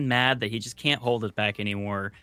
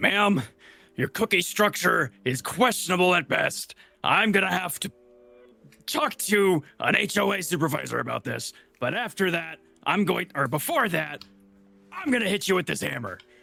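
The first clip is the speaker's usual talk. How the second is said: high, winded voice, huffing and puffing; 6 semitones higher than usual. Voicing a character who reaches the table out of breath: character huffing and puffing. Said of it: "huffing and puffing".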